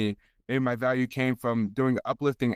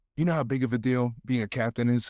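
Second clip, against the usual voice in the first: mock whispering. Retelling what a coach said at practice: imitating a coach whispering. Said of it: "whispers, whispers in my ear".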